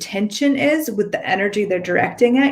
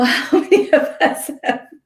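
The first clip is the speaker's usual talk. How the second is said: light, pitched-up giggling at oneself; 7 semitones higher than usual. Responding to a comment about things having power over us, giggling at own old self. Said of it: "I'm giggling at myself".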